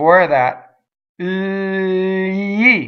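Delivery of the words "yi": super slow-motion yi, very drawn out. Breaking down a sound preceded by an l: 'yi' in super slow motion. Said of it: "I'm doing it in super slow motion".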